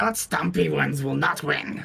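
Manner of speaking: creaky, high rat creature voice. Offering to commentate like a Skaven, the speaker talks in a Skaven voice. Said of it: "commentate a little bit like a uh, a Skaven".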